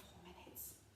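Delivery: soft, hushed whisper. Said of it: "Whisper it quietly".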